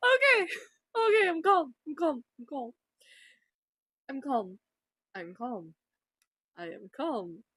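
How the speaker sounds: giggly, laughing through every word, swooping pitch. Trying to calm down but unable to stop laughing; giggling while talking. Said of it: "I need to stop smiling and giggling".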